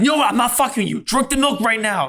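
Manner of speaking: high, barked put-on yell. Retelling how he told the speaker to drink milk: imitating someone yelling. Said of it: "yelling at me".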